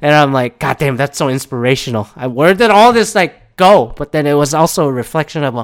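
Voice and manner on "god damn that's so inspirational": usual speaking voice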